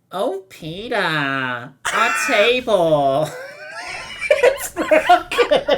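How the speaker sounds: put-on cartoon housewife voice, drawn-out "our". Taking a turn in a group voice-impression game, doing a Lois Griffin impression. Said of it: "It's my best Lois".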